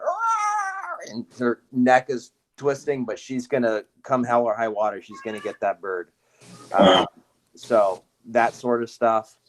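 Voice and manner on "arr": very high, strange imitated dog bark. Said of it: "she's going".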